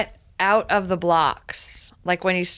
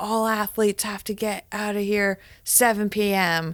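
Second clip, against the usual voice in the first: mock stern, irritated, angry man's yelling; 2 semitones higher, 3 dB quieter than usual. Retelling how an angry man kept yelling at the group: imitating an angry man yelling. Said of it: "kept yelling".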